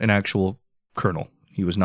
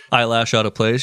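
plain

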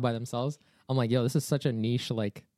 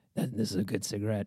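rasping voice, as if through a cigarette; 3 semitones lower than usual. Retelling a movie scene, a captive smoking a cigarette: imitating a raspy voice. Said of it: "the raspy voice".

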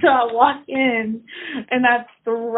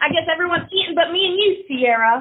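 put-on, worked-up, angry griping voice, pitched up; 5 semitones higher than usual. Retelling her mother walking in while she unwraps a burger; imitating mom sounding mad. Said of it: "she gets all mad".

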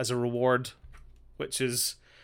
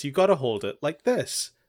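normal talking voice

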